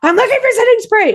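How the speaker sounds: mock, very high, frantic, shrill shriek. Retelling how a friend acted in a store aisle: imitating someone screaming. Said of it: "You're screaming".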